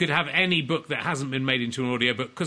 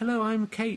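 very high put-on girl's voice, sudden upward jump; 9 semitones higher than usual. Offering to voice the book's audiobook, putting on a girl's voice. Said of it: "I can put on a girl's voice".

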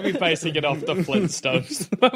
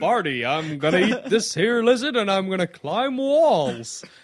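dopey, goofy cartoon bear character voice. Riffing on the Flintstones with friends, say it in a Yogi Bear voice. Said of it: "I don't know why I did a Yogi Bear".

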